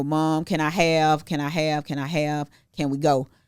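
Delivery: put-on pleading voice of a young child. Retelling how a seven-year-old kept asking: imitating a begging seven-year-old. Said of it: "he was being a typical seven-year-old".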